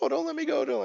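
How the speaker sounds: very high, frightened, terrified pleading voice. Retelling a game scene where the speaker's character clings to a dwarf barbarian, acting terrified. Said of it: "I'm just terrified".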